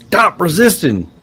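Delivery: shrill, very high, loud, barked yell. Narrating a character pinning an orc at gunpoint, yelling. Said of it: "starts yelling".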